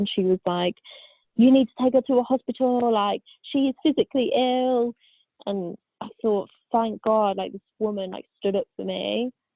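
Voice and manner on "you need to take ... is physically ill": acted, firm, urgent, raised insistence. Recalling a woman who stood up for her, retelling a scream. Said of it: "she just screamed".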